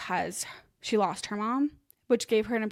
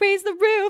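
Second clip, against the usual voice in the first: very high, loud, giddy, over-the-top excitement; 11 semitones higher, 9 dB louder than usual. Retelling mom's line to friends in the car: imitating mom's excited voice. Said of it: "being all excited and weird".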